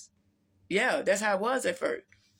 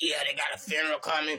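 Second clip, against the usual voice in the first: put-on, demon-like voice; 4 semitones lower than usual. Retelling a phone call from Terry, doing her voice as a demonic voice. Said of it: "She sound like a demon".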